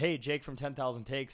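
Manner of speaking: ordinary talk, nothing marked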